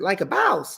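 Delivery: hard Southern Georgia accent, boss said as bauce. Repeating a phrase the way someone from Georgia would say it, Georgia Southern accent. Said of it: "Or if you're from Georgia".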